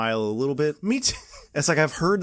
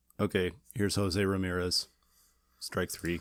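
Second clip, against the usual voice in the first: very low, flat, unexcited bored announcer voice; 8 semitones lower, 8 dB quieter than usual. Imitating Bob Costas calling a Cleveland at-bat: unexcited Bob Costas impression. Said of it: "the lack of excitement".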